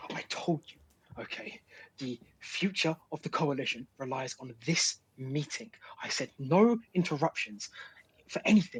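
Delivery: furious words, all whispered. In a role-played scene, a character speaks in whispered anger. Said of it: "but like whispered anger".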